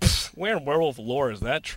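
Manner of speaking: put-on dismissive scoffing with a pfft. Retelling what someone said from the back seat, imitating a friend scoffing. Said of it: "he goes".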